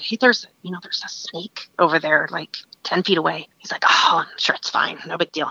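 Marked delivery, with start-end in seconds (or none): 0.0-3.5 whispered, lower and slower. Hiding in the bushes, the speaker retells whispering to the guide: retelling a whisper. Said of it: "I whisper to the guide".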